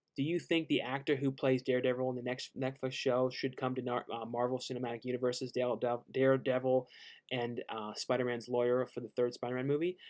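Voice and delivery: plain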